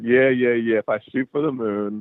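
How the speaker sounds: put-on sarcastic tone. Telling how they answered their mama after flunking out: retelling a sarcastic reply. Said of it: "I said it with some sarcasm in my voice".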